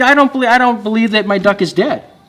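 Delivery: high, weepy, sobbing crying voice. Retelling a joke, quoting a woman told her duck is dead: imitating someone crying. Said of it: "And she cries".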